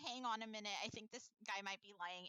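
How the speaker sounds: plain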